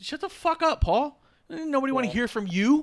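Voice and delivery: scornful, disgusted, very high and loud. Retelling a match scene, imitating Roman disgusted with Paul. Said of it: "Roman looks at him disgusted and goes".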